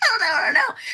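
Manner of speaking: high, panicky, near-crying dithering. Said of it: "And I'm like".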